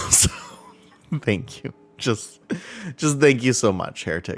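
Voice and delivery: choked-up, tearful voice faltering with breaks mid-phrase. Speaker thanks Heretic and says they appreciate them, holding back tears. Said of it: "I'm trying not to cry right now".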